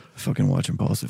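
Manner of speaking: put-on secretive hushed tone. Retelling an older fan approaching at a fight: imitating a secretive drug-deal tone. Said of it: "Like he's doing a drug deal".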